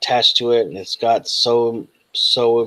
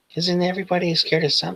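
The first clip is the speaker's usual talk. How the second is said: put-on high, small child's voice; 7 semitones higher, 4 dB quieter than usual. Voicing a strange figure answering the players: little kid's voice. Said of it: "it switches back to a little kid's voice".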